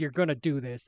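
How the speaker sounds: put-on stern, disappointed father voice. Recalling reading the father's letter aloud: imitating a stern, disappointed father. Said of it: "disappointment and stern, like".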